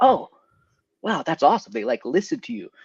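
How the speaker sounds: put-on starstruck teenage excitement. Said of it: "And I was like".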